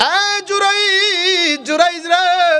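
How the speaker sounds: high, slow, drawn-out calling voice.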